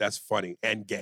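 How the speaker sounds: plain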